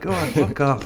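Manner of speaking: put-on blunt, curt delivery in a Scottish accent. Quoting a scottish man's reply, imitating his scottish accent. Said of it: "In his Scottish accent".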